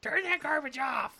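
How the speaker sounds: put-on very high, loud, furious scolding mother yell. Speaker recalls their mom scolding the kids before church, imitating angry mom yelling. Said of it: "she would get so mad at us".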